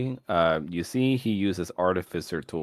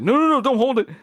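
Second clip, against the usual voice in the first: very high, very loud, shrill, panicked yell; 9 dB louder than usual. Storyteller voicing Nathaniel as Era holds the crystal; Nathaniel freaking out. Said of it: "Nathaniel starts freaking out".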